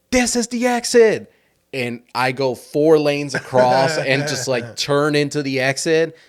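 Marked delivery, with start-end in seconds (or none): 0.1-1.3 high, loud, fearful panicked yell. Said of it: "with fear in her voice just yells out".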